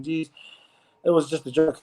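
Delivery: ordinary talk, nothing marked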